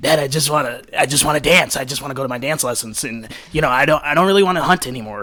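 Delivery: put-on child's voice sounding like a forty-year-old smoker. Retelling a scene where a kid tells his dad, kid sounding like a forty-year-old smoker. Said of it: "kid sounded like a forty year old smoker".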